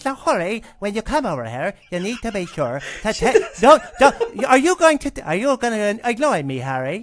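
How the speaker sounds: pinched nasal witch voice. Showing how a character was voiced when reading to the kids: Dolores Umbridge voice. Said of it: "that's how Dolores Umbridge spoke".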